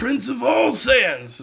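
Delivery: very loud, swooping, proud belted-out shout. Explaining what Vegeta calls himself, then quoting him: terrible Vegeta impression. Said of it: "terrible impression".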